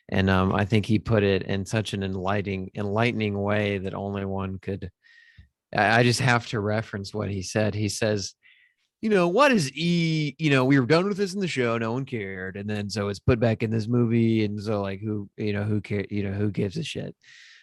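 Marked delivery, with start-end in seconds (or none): 9.0-17.1 casual, rambling reviewer-like voice. Quoting a reviewer's take on the movie: Jeremy Johns impression. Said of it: "that's not the best Jeremy Johns imper-, impersonation".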